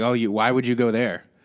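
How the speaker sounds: put-on annoyed voice. Retelling what a store clerk said: imitating a pissy clerk. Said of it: "get a little pissy about it".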